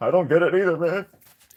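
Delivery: high, loud, tearful speech through crying. Voicing a character who answers Terry's complaint, crying while talking. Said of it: "now he's crying".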